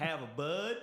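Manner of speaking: put-on Southern American accent. Joking about picking up an American accent: Southern accent. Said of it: "I do like the Southern accent".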